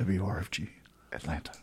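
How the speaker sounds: late-night radio voice. Repeating the station ID for another speaker, late-night radio voice. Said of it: "That was my late night radio voice".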